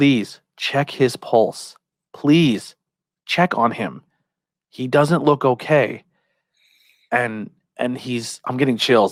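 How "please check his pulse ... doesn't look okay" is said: slow, anxious, worried pleading. Retelling what concerned people on the street said, imitating worried pleading. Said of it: "you hear it in their voice".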